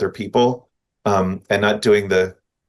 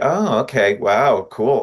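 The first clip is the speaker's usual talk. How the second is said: coy, sly, noncommittal, very slow, drawn-out delivery. Showing how to answer an underminer's remark: sly reply. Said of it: "be sly about it and just be like".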